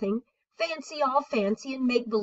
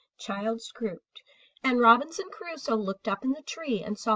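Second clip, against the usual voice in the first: ordinary delivery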